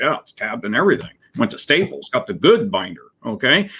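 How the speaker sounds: put-on, dry, smart-aleck sarcastic jab. Retelling what he told a client about a report: retelling a sarcastic remark. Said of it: "you should pick up on the sarcasm".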